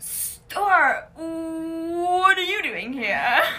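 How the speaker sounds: very loud, slow Californian drawl, "what" stretched. Running through a list of impressions, the speaker does The Californians character voice. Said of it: "Fred Armisen's character in The Californians".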